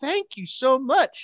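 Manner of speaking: acted-out, thrilled, very high-pitched, excited gushing. A father retells his daughter thanking him for her prize, imitating a daughter's excitement. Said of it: "She was real excited".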